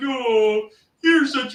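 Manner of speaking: put-on high, cooing baby-talk voice. Retelling how the speaker talks to her, cooing baby doggy voice. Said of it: "in the baby doggy voice, like".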